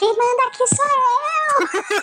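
put-on very high shout with "eu" drawn out. Describing power going to your head in a classroom, retelling a shout. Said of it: "E aí você se vê gritando".

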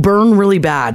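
ordinary talk, nothing marked

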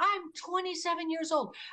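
mock screaming. Retelling screaming at a parent, finger shaking: retelling a scream. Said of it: "I was screaming at her".

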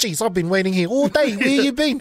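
put-on aggressive New Zealand accent. Performing a scene from the Shrek script, in an aggressive Kiwi accent. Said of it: "that real aggressive Kiwi accent".

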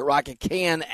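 ordinary talk

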